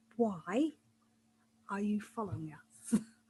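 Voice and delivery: very soft, quiet, calm, menacing voice. A player speaking in character during a game, very quiet and calm. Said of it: "just ask them very quietly, very calmly".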